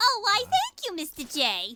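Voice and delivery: high, swooping, sing-song character voice. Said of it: "she does kinda sound like Harley".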